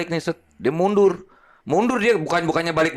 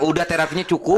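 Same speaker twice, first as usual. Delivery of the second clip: plain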